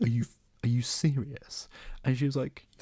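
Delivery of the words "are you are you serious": angry whisper, quieter. Retelling turning to a crying friend in the cinema: imitating own angry whisper. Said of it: "I whispered, like, in an angry".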